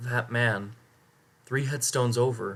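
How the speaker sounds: plain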